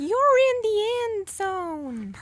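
very high put-on American child voice, "zone" drawn out. Asked to do it in an american accent, speaking like an american child. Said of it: "you do it in an American accent".

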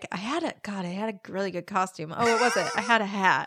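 play-acted, very earnest, heartfelt, fully straight-faced tone. Retelling how the other speaker described a costume before: imitating someone sounding very sincere. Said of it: "you sounded very sincere. You were like".

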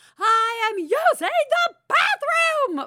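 very high, loud, drawn-out top-of-the-lungs scream. Retelling yelling at the children from the bathroom: imitating own screaming at top of lungs. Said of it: "screamed at the top of my lungs".

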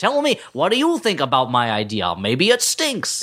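exaggerated, swooping American accent. Imitating Monty Python Englishmen doing Americans: mock American accent, over-enunciated R's. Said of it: "real lines from Monty Python sketches".

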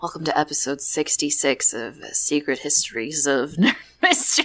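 uncomfortably close-mic voice, pressed right onto microphone. Opening the episode, leaning in: uncomfortably close to the microphone. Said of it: "uncomfortably close to the microphone".

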